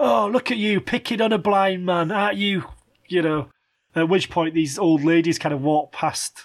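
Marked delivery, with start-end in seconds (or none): 0.0-2.6 high, mild, accusing half-shout. Retelling what the blind guy yelled back: imitating someone shouting. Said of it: "kind of shouting at me".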